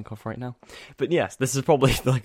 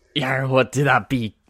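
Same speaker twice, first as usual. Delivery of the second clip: mock pirate voice, higher and louder; 3 semitones higher, 6 dB louder than usual. Answering in kind on Talk Like a Pirate Day: put-on pirate talk. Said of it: "it is Talk Like a Pirate Day".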